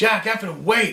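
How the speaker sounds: mock, freaked-out, panicked, very high cry. Retelling tripping on the path while running away: imitating a panicked shout. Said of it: "I'm freaking out like".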